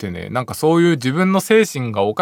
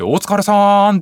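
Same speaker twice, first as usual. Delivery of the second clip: mock big, loud, pitched-up, drawn-out call; 8 semitones higher, 4 dB louder than usual. Retelling greeting everyone at a convenience store: retelling a loud greeting. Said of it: "みんなに大きい声で".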